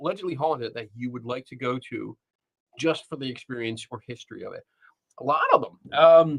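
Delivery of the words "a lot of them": very high voice leaping sharply upward. Answering a question about haunted places to visit; voice going up. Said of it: "why my voice went up like that".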